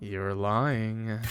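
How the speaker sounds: low-voiced, seductive, sultry tone. Narrator reading Adam leaning close to the listener, in a low seductive voice. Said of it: "in a low, seductive voice".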